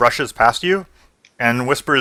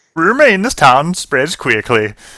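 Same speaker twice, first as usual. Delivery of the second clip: put-on Swedish-accented delivery; 3 semitones higher, 4 dB louder than usual. Retrying a character's line after others suggest swedish, in a swedish accent. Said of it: "try Swedish".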